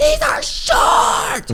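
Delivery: very high-pitched put-on furious toddler tantrum scream. Retelling how a child screamed about her pants: imitating a child screaming. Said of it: "she screamed".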